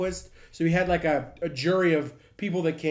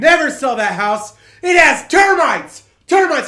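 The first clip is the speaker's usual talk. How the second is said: very loud, high, swooping furious yell; 7 semitones higher, 11 dB louder than usual. Retelling a mother yelling at a neighbor across the street: imitating mom yelling. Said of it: "she pointed and yelled".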